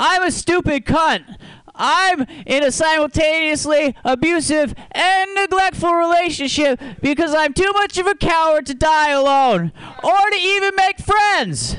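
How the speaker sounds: shrill, very high-pitched woman's voice. On a show, you introduce a bit about your mom; do an impression of your mom. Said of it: "this is an impression of my mom".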